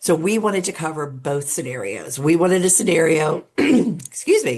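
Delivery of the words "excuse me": high voice with a choked-up catch. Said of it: "getting all choked up here".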